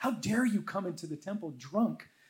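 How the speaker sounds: put-on scolding voice. Retelling the head priest rebuking a woman in the temple, mock rebuke. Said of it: "he rebukes her and says".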